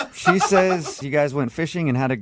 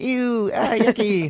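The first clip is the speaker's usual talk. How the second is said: play-acted, high, girly squeal of disgust; 8 semitones higher than usual. Retelling how she reacted when they caught a fish: imitating a disgusted scream. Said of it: "she screamed, was like".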